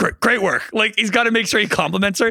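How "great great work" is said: put-on under-the-breath mutter, higher. Retelling a background remark from McAfee: imitating McAfee muttering under breath. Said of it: "under his breath".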